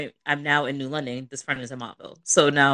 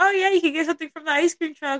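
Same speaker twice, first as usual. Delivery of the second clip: imitated excited voice, higher. Retelling how Mom reacted to the found money: imitating someone excited. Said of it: "all excited".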